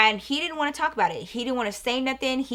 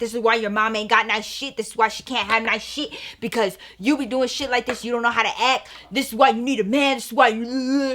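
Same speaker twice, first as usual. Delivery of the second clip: put-on angry berating male voice. Retelling a man going at the speaker's brother: imitating a man berating someone. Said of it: "acting a complete fucking fool with my brother".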